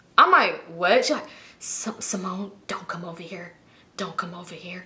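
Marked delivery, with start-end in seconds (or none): 1.6-4.9 barely audible, hushed, very soft whisper. Retelling a phone call where a woman warned her, imitating someone whispering. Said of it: "she's whispering".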